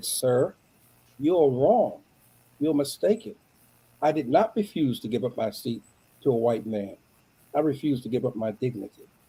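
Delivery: put-on very quiet voice. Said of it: "in that very quiet voice".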